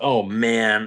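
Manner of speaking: ordinary talk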